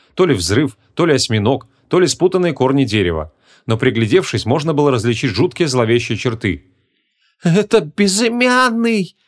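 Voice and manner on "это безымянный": very high, quavering, trembling cry. Narrator reading the Eist's line on seeing the emblem; trembling cry. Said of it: "дрожащим голосом вскрикнул эйст".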